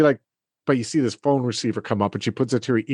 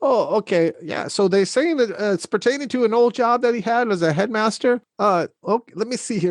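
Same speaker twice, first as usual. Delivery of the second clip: put-on flustered, nervous elderly voice; 9 semitones higher than usual. Voicing a receptionist on the phone, finger shaking: nervous old receptionist voice. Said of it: "She's like".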